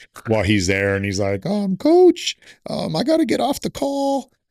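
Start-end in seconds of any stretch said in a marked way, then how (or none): 1.5-4.3 put-on very high-pitched, slow, small young-kid voice. Retelling early Zoom calls where Mike addressed him as coach: imitating Mike's high-pitched voice. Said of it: "he has the high pitched voice".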